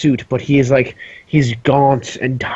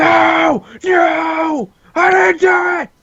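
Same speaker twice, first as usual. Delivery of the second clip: very high, slow, drawn-out, freaked-out panicked voice. Voicing a caged knave who wakes and grabs the bars: panicked outburst. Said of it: "freaks out".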